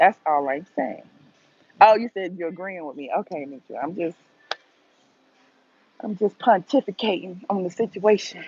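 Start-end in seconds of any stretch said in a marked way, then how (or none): 6.0-8.4 playful impression of someone's way of talking. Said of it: "in my T I voice".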